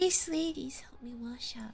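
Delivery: hushed, very quiet, soft, barely-there voice. Helena answers someone who has just complimented her, in a very quiet voice. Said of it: "she answers in a very quiet voice".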